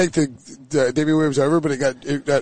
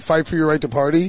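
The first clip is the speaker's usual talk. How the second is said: ordinary talk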